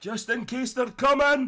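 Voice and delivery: high, loud, panicked yell.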